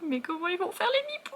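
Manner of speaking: distraught, high, weepy, tearful whine. Recalling reading a book about a couple at an impasse; acting out own crying. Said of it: "je pleurais".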